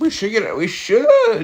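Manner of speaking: cracking voice. Commenting live on weather radar, the speaker's voice cracks. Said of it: "that was a huge voice crack".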